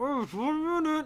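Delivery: very high, muffled voice as if through clothespins. Narrator voicing Solaire as visitors arrive while he works: Solaire, mouth full of clothespins. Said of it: "he's like got a mouthful of like clothespins".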